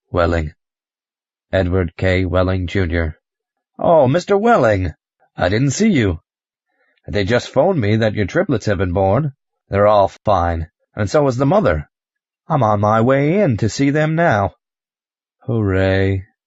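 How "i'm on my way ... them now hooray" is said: glum, joyless, halfhearted, unhappy exclamation. [name], just told his triplets are born: unhappy. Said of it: "You don't sound very happy".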